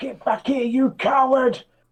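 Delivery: very high, slowed-down shout. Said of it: "I'm gonna shout".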